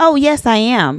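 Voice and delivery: assured, confident, very slow and deliberate. Retelling an answer to a man who asked if they were married: retelling a confident answer. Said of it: "And I said it with confidence".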